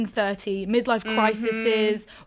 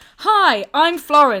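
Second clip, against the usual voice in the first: acted, very loud, booming, pitched-up, dead-certain delivery; 6 semitones higher, 10 dB louder than usual. Retelling a scripted intro said wrong, imitating saying it with conviction. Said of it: "it was just with such conviction".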